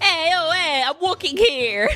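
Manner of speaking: poor put-on New York accent. Admitting accents are hard, trying one anyway: bad New York accent. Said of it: "The only thing I can do about York".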